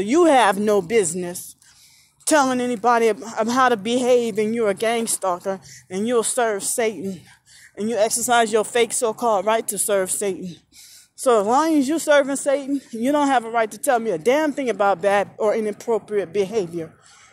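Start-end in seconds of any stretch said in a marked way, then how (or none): none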